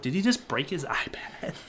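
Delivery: stunned, disbelieving, hushed whisper. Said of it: "I was like".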